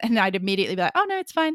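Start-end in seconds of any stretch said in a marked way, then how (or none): 1.0-1.6 put-on very high-pitched twenty-two-year-old voice. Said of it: "that's my twenty-two-year-old voice".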